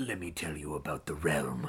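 very quiet, very low, hushed, sly, scheming murmur. Recounting how an actor's voice changed by the end, mock-mischievous Baelish voice. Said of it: "that was his mischievous voice".

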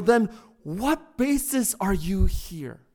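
slow, mock exasperated, frustrated tone. Retelling a preacher's imagined talk with the thief: imitating a frustrated question. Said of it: "And out of frustration".

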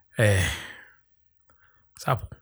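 depressed, defeated tone. Announcing a pick to the group, sounding depressed. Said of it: "That sounded depressed".

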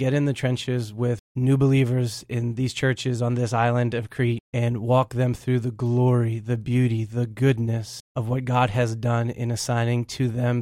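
normal talking voice

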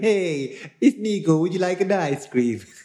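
very high-pitched put-on Italian accent. Acting out how you imagine the guest going up to kids, in a put-on Italian accent. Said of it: "I could never get bored of the accents".

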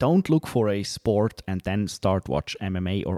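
normal talking voice

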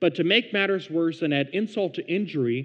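plain

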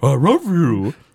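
dog-like cartoon voice. Recapping a Simpsons episode, quote Homer on the phone in a Scooby-Doo-esque voice. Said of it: "It's a very Scooby-Doo-esque voice".

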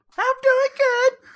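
very high, squeaky voice.

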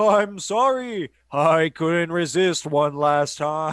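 ethereal ghost voice. Describing how a character got pranked, quoting his last words: ethereal Old Man Hillhurst voice. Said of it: "we literally get an ethereal voice".

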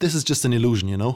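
ordinary delivery, nothing marked

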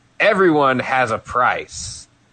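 ordinary delivery

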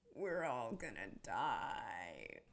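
chilling, very low, soft, slow murmur. Retelling a favourite movie line reading: imitating Tina's chilling line reading. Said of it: "she just turns to them and she says".

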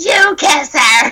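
high, shouted, yelling-out voice. Recounting a woman at the movies shouting at the speaker's dad, retelling her yell. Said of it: "She was like".

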